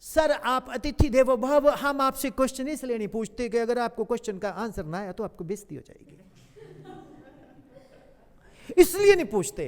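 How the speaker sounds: put-on Mandi-accented speech. Retelling words said to a visiting guest, in a Mandi Himachali accent. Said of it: "उसने मंडी के एक्सेंट में बोला".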